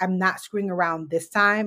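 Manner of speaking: ordinary talk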